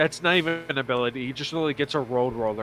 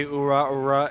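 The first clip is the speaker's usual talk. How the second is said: usual speaking voice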